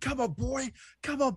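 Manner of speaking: very high-pitched goading, taunting shout. Retelling a player squaring up to an opponent: imitating Alan Alatoa yelling. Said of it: "and just yelling at him".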